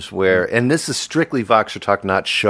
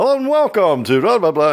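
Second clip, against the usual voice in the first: very high put-on radio announcer voice; 11 semitones higher, 3 dB louder than usual. Showing the show voice for the record show, radio announcer voice. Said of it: "my show voice for like uh, the record show".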